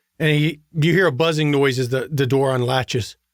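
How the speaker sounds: ordinary talk, nothing marked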